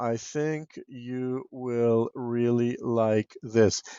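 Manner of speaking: flat monotone drone, no inflection. Coaching on reading scripts, showing a voice without inflection: monotone. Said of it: "it's very monotone".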